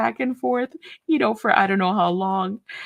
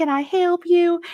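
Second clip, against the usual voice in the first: put-on, slow, high-pitched Southern drawl; 6 semitones higher, 4 dB louder than usual. Retelling how a woman greeted them as they came in: imitating a Southern accent. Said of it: "she's doing the Southern accent".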